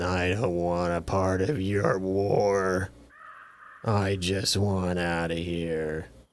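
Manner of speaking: cheeks puffed out, words dragged very slow. Imitating a guy from a Showtime series, talking with puffed-out cheeks. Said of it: "puffed out cheeks and like just kind of talk like this".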